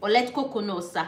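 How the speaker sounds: ordinary talk, nothing marked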